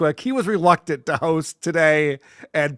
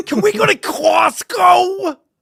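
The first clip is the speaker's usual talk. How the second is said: squeaky, very high, loud, very slow drawn-out voice; 14 semitones higher, 6 dB louder than usual. Joining in as a member of Opie's imagined family: Opie's family talking like Opie. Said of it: "imagining Opie's entire family talks like Opie does".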